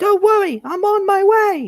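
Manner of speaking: very high, little cartoon train engine voice. Offering friends his impression, then performing it: Thomas impression. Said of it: "my impression of Eddie Glenn's Thomas".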